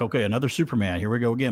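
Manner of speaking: normal talking voice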